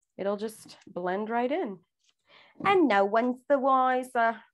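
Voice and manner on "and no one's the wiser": British-accented delivery. Quoting a line while taping an edge, in a British accent. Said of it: "I said that in a British accent".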